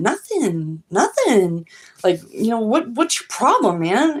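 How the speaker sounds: put-on innocent voice. Retelling your reply when someone confronted you angrily: retelling an innocent denial. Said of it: "very innocently".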